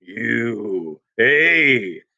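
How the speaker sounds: speaking in a low voice. Narrator reads a man's words to the storyteller, in a low voice. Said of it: "Then in a low voice".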